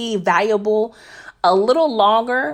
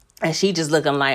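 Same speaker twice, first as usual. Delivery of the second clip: ordinary delivery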